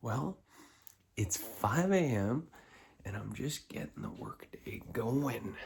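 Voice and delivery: hushed whisper. At five a.m., speaker records a New Year video for viewers: whispering. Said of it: "I'm whispering".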